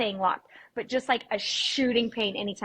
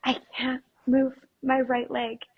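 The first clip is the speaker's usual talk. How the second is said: put-on whisper; 3 semitones higher than usual. Retelling what was said while using chairs as crutches: imitating own whisper. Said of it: "try to whisper".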